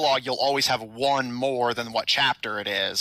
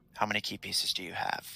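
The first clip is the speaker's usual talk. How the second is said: close, secretive, hushed, very quiet whisper; 4 semitones lower, 9 dB quieter than usual. Voicing a character who pulls the player close: whispering. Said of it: "pulls you in to whisper to you".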